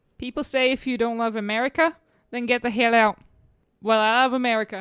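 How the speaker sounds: terrible put-on Australian accent. Doing an accent for a co-host to guess; bad australian accent.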